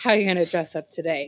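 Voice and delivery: put-on grown man's way of talking. Asked for a grown man voice, repeat the question in a grown man voice. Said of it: "Grown man voice?".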